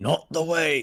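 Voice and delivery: put-on semi-Australian accent. Asked to voice Jet Porkins, the player delivers his line, Jet Porkins in semi-Australian accent. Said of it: "I keep going to semi-Australian accents today".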